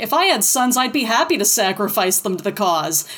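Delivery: ordinary talk, nothing marked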